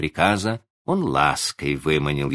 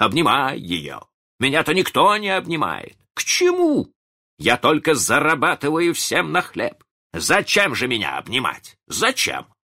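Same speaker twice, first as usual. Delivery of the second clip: very high, bitter, aggrieved shouting; 9 semitones higher than usual. Reading a story, a father shouts at his wife and children, shouted. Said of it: "закричал он".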